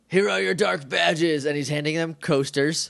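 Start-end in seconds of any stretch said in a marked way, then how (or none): 0.1-1.4 rough, raspy, creaky voice. Retelling a scene where Goldar hands out badges: Goldar voice. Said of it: "as if you couldn't tell by the voice".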